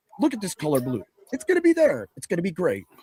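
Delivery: low, swooping, hard-sell infomercial delivery. Describing going infomercial during a show, in an infomercial pitchman voice. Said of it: "He's like a walking infomercial".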